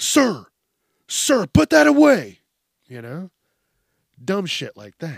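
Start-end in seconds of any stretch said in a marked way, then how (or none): 0.0-2.4 very high, shrill, drawn-out, swooping cop voice. Acting out a peace officer telling a man he is rowdy: imitating a police officer. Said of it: "I hate when they say, "A peace officer."".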